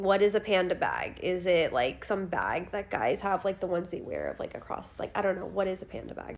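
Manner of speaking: ordinary talk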